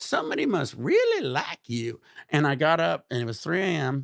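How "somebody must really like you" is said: put-on southern accent with swooping drawl. Retelling what a woman in jail said to him, in her southern accent. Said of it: "She had this southern accent".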